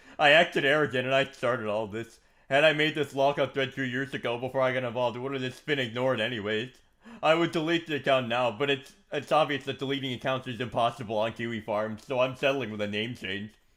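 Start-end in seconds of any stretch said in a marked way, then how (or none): none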